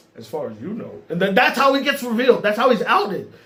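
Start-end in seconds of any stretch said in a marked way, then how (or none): 0.2-1.0 low, much softer under-the-breath murmur. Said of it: "under his breath is like".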